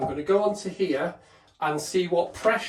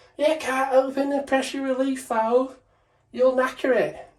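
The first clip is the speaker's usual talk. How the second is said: high, mild mock yell. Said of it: "start screaming, going".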